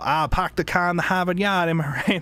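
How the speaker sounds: put-on Boston accent. Mimicking people who hear the speaker is from boston: stereotypical boston accent. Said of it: "the most like stereotypical Boston accent".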